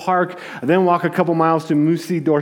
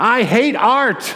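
put-on high, fed-up five-year-old's outburst; 6 semitones higher than usual. Retelling how a friend's five-year-old daughter lost it at the Louvre: imitating a child shouting. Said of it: "She just shouted out".

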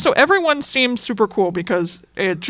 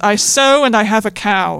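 put-on self-deprecating tone, slower. Recounting a male movie character's line: mock self-deprecating, 'I'm so silly'. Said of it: "he tries to say it as like a thing of, oh, I'm so silly now".

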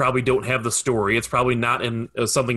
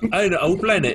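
put-on Cockney accent, much higher; 7 semitones higher than usual. Joking about an Australian Transformers game, the speaker voices a line in a Cockney accent. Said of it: "That's more of a Cockney accent".

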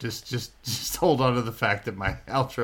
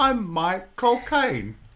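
put-on British accent, higher and louder; 11 semitones higher, 5 dB louder than usual. Showing the others an easy trick: Michael Caine impression. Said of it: "a Michael Caine impression".

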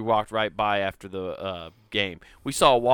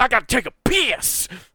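mock very high, aggressive, drawn-out yell; 13 semitones higher, 4 dB louder than usual. Retelling how a man turned toward them: imitating an aggressive yell. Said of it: "turns to go back to us real aggressively and goes".

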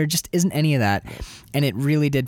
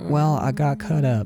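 mock timid, meek, mousy woman's voice. Imitating the movie character who gets cut up: imitating a mousy woman.

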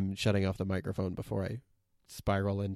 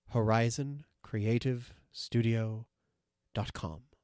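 said more slowly; 2 semitones higher than usual. Speaker repeats the web address for listeners, said more slowly. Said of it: "I'll say that slower".

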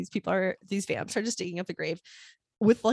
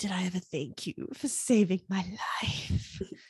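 seductive, sultry, sexy whisper; 4 dB quieter than usual. Recapping a scene, quoting Buffy to Xander: sexy whisper as Buffy. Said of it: "sexually whispers to Xander".

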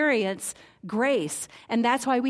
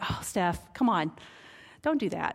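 gentle, low, kind and loving voice; 4 semitones lower, 4 dB quieter than usual. The speaker describes being lovingly corrected, imitating the Holy Spirit's gentle voice. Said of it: "his voice is so gentle".

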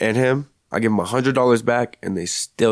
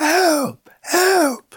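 very high mock screamed cry. Telling how an older man saved his life, reenacting screaming for help. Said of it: "I was screaming".

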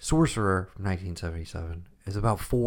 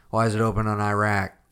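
grumpy 1970s moviegoer voice, louder; 5 dB louder than usual. Voicing a disgruntled seventies film goer complaining about The Exorcist: disgruntled seventies filmgoer voice. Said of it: "my disgruntled seventies film goer".

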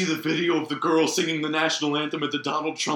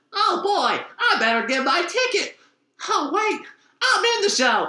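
very high cartoon voice with swooping, bouncing pitch; 14 semitones higher, 4 dB louder than usual. Describing a promotional video, the speaker quotes its ending in SpongeBob voice. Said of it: "That was a pretty good SpongeBob".

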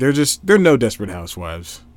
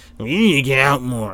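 mock, nagging voice. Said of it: "That's how they sound".

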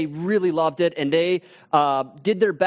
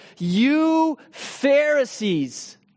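loud, high, mock-contemptuous call, "you" drawn out; 8 semitones higher than usual. Retelling a story where a man calls out to the Pharisees in a loud scornful voice. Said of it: "he sort of in a loud voice".

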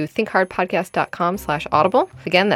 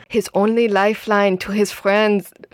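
documentary narrator voice; 3 semitones higher than usual. Reading a funny quote aloud, in his best Werner Herzog voice. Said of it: "my best Werner Herzog voice".

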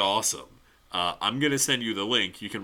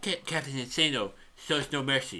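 stuttered first syllable "Ca-" before "Captain"; 4 semitones higher, 5 dB quieter than usual. Quoting a movie line during a chat: Bobby Boucher voice. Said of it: "I do the Bobby Boucher voice too well".

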